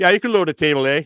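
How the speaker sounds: loud put-on Canadian accent, Canadian "a" in "table". Explaining what he meant by table A, imitated Canadian accent. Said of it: "like you Canadians say A".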